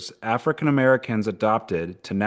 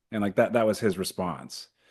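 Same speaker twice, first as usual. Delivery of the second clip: usual speaking voice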